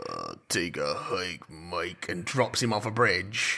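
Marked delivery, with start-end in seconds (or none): 0.1-2.1 low-pitched, slow and flat delivery. Retelling a film scene where Vin Diesel speaks: Vin Diesel monotone. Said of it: "he's just Vin Diesel sort of monotone just says".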